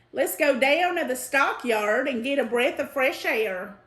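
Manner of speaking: Southern American drawl, a Southern way of speaking. Repeating a dad's expression, said in a Southern accent. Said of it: "got to say it in a southern way".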